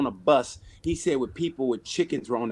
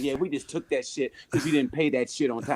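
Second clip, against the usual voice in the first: dismissive, snide tone loaded with attitude; 3 dB quieter than usual. Retelling what the people on the phone said: imitating attitude-filled tone. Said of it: "they said it with stank on it".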